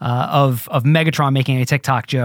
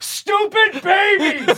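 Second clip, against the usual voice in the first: play-acted shrill, very high shrieking yell. Retelling what he yelled after a person walked away, retelling a yell. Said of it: "he yells".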